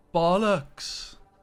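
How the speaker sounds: practiced put-on Welsh accent attempt. After promising listeners to practice, showing off a practiced Welsh accent. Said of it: "I have been practicing my Welsh accent though".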